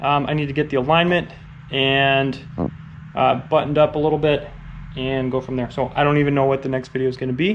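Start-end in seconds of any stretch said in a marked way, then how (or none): 5.7-7.6 very fast, rattled-off speech. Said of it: "I'm talking really fast in this".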